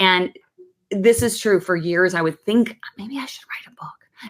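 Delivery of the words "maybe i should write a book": barely voiced, hushed, secretive whisper, very quiet. Recalling a thought he didn't dare tell anyone, whispered. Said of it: "I'm whispering it".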